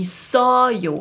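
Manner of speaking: heavily exaggerated stress on so in isoyo. Korean lesson in German, exaggerating on purpose: exaggerated stress on SO in isoyo. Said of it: "die zweite Silbe vom Satzende betont wird ... Ich übertreibe jetzt, um das zu demonstrieren".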